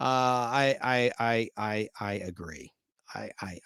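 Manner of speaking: very slow, halting, stalling stammer on "I". Answering a listener's comment that the show runs too long: stuttering. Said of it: "I'm stuttering".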